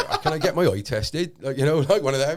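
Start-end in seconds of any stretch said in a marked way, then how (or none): 0.2-1.3 a bit of a put-on country farmer accent. Speaker recalling asking for an eye test in Hereford, bit of a farmer accent. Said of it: "with this like bit of a farmer accent".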